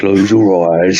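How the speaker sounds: slow, soothing meditation-guide voice. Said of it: "Imagine me doing it".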